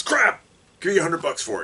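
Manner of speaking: very high, loud voice with swooping, swinging pitch. Judging a partner's collection as a joke: J. Jonah Jameson impression. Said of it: "my J. Jonah Jameson impersonation".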